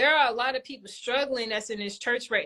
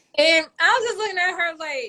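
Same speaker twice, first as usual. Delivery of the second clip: ordinary talk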